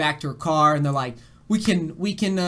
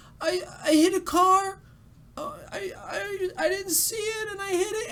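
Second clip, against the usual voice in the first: very high, slow, tearful voice on the verge; 4 dB quieter than usual. Retelling what a woman said after hitting a car: imitating a crying woman. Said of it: "just complete waterworks".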